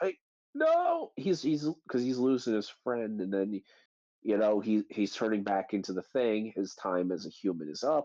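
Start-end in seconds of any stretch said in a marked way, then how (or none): 0.0-1.1 very high, panicked yelp. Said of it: "he's just like".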